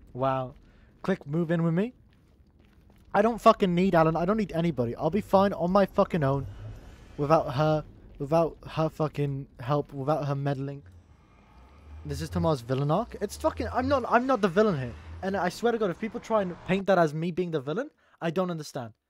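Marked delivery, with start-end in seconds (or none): none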